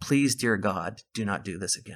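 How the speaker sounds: soft, hushed half-whisper under the breath. Recounting what another man half-whispered to the speaker, retelling a half-whisper. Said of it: "And he whispers to me".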